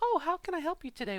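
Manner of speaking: fake posh woman voice. Speaker shows how she used to sound, imitating her very fakey voice. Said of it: "very fakey sounding voice".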